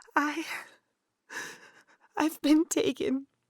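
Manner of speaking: tearful voice. Telling a friend on the phone about being taken: crying. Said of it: "You sound like you're crying".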